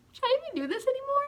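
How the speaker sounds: high, fast, scared, panicked, doubtful squeak. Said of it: "I was like".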